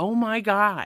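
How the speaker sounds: high yelling. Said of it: "And I yelled that".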